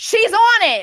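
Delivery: high, loud, incredulous, outraged exclamation.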